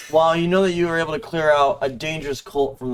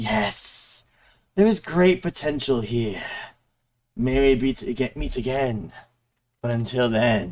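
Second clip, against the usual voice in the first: low, deep, hissing ghostly voice; 3 semitones lower than usual. Game narrator voices a skull apparition just before it vanishes: hissing baritone. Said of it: "The apparition speaks in a hissing baritone".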